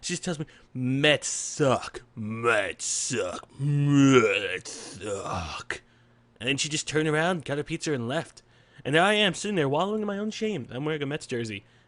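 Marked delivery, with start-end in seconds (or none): 0.7-5.8 put-on grave old lady, very slow, one word drawn out. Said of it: "with a dead serious face".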